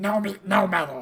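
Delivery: very loud, shrill goblin voice yelling. A goblin shouts back in answer to the party's call, goblin shouting. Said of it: "and it shouts out".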